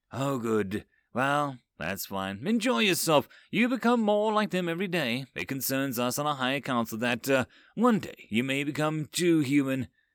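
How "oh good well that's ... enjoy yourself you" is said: ordinary delivery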